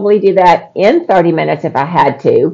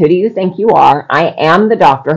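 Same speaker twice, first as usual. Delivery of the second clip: put-on nasty, condescending doctor voice. Retelling a doctor's reply to a concern about the instructions, imitating a nasty attitude. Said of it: "he got a real nasty attitude".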